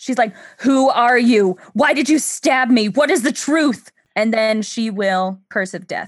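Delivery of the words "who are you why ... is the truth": furious, pissed-off angry shouting. The stabbed lady, pissed, starts yelling at her attacker, yelling in anger. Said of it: "And she starts yelling".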